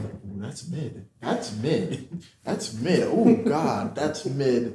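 slow, drawn-out, hushed half-whisper. Retelling what a companion half-whispers while walking: imitating a half-whisper. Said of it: "whispering to me".

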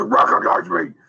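put-on loud yell. Joking about Roman Reigns signing autographs, imitating Roman Reigns mock-yelling at the kids. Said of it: "He's just yelling at the kids".

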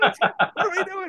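very high, slow, panicked protesting tone.

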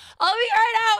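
voice breaking into a very high squeak. Retelling answering dad's knock at the bedroom door: imitating own voice cracking. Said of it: "my voice cracked".

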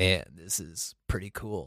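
mock dead-flat, low, very quiet drone. Contrasting everyone else's celebrating with Phil's reaction, in a flat monotone Phil impression. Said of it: "Phil is a pure monotone".

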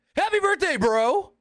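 very high-pitched, all-out shout. Retelling what someone in the ring yelled: imitating someone yelling. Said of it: "he just yells".

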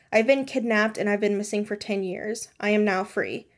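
plain

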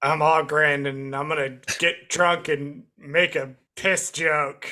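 put-on gruff, brutish dwarf voice. Discussing characters with gruff voices, giving a best impression: Ogryn impression, gruff voice. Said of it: "That's my best impression of Ogryn".

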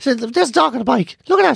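put-on gravelly, creaky voice. Describing the voice their sister puts on, imitating their sister's voice. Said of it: "That's what she sounds like".

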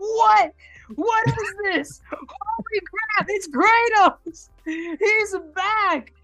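high-pitched, blurted, stunned total disbelief.

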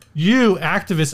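normal talking voice

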